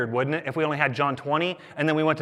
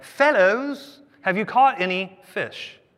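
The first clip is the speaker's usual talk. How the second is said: slow, high, put-on British accent; 5 semitones higher than usual. Reading a Bible passage aloud, voicing Jesus calling out to the disciples: British accent. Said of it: "probably in a British accent too".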